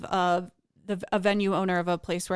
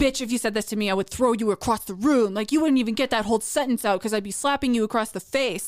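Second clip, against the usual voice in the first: mock threatening, higher pitch; 4 semitones higher, 4 dB louder than usual. Retelling replies from men to a tweet: imitating threatening men. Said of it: "men threatening me on the internet".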